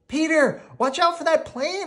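very high, shrill, rushed, fast shouting. A narrator reads a warning called to a friend on a flying machine: yelling. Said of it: "I yelled".

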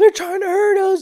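very high, shrill, frantic scream. Retelling grown men running into Taco Bell, acting out their screaming. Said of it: "they start screaming".

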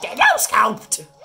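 high squeak. While playing a Mario game, the player calls this out in Toad voice. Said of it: "in a toad voice for some reason".

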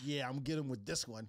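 thrilled, excited, eager, worked-up tone. Retelling how someone announces a joke he's proud of: imitating someone excited. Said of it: "he gets excited about it, too, with a big smile on his face".

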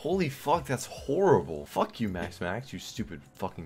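angry. Reacting to getting another Max and cursing at it: angry. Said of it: "Sorry, I'm mad".

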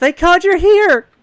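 very high, shrill, very loud excited yell. Voicing a sister in the corner who recognizes Friedrich: excited yell. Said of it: "excitedly yells".

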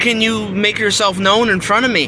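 normal talking voice

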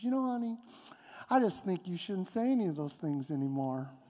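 sweet-as-can-be, extra nice voice. Retelling a disagreement, the speaker quotes a woman's reply in the nicest Pastor Melinda voice. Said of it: "in the nicest Pastor Melinda voice".

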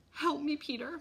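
high, begging, imploring, pleading tone. Mom turns to peter for help, begging. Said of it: "Mom begged".

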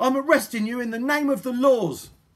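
loud, high shouting. Polly confronts the robbers on their fishing boat, shouting. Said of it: "shouted Polly".

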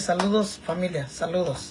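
normal talking voice

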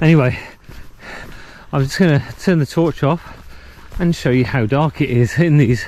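a bit out of breath. Just came up a hill, talking to viewers, a bit out of breath. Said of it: "We're a bit out of breath".

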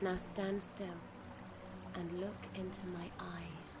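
sultry tone. A character gives another an instruction, seductively. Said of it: "Did you have to say it so seductively?".

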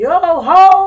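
loud high-pitched yelling. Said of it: "yell out".

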